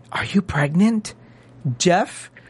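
put-on whisper. Retelling whispering to her at dinner while Jeff is there: retelling a whisper. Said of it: "So I whispered to her".

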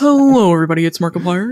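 loud, boomed-out impression voice.

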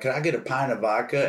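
usual speaking voice

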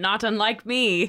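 put-on high, loud, daft old-granny skeleton voice. Voicing a skeleton character, in a silly grandma skeleton voice. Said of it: "I still need to work on my skeleton voice".

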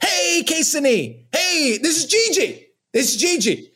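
drawn-out, slow, high-pitched yelling. Retelling calling out to a kid across the street: retelling own yelling. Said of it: "I'm just yelling at a terrified kid".

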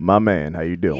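smooth, sweet, molasses-like voice poured on thick. Imagining meeting Billy Dee Williams and his reply: sweet molasses voice. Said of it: "With that sweet, sweet molasses".

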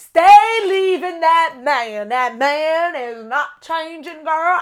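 put-on Southern accent. Giving a letter writer relationship advice: southern accent. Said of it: "in this southern accent".

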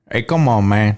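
put-on Cuban gangster accent. During a voice exercise, saying a short practice phrase as a Tony Montana voice. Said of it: "that was Tony Montana".

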